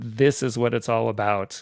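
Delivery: normal talking voice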